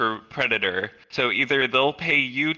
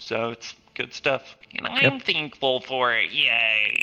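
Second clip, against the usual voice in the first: put-on nerdy voice with drawn-out "yay". Wrapping up talk about VR improvements, speaking in a put-on nerd voice. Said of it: "That was my nerd voice".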